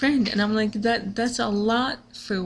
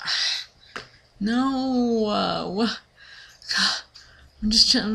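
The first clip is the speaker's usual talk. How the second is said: upset, faltering, very slow, drawn-out no. Retelling a friend cancelling on the band, imitating own upset reaction. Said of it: "I was so upset".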